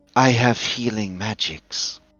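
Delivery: quiet, close half-whisper. Game master voicing a character who half-whispers in a player's ear: half-whispering. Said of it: "she whispers in your ear".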